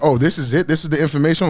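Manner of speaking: ordinary talk, nothing marked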